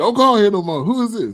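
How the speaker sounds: high, loud, mock angry scolding tone.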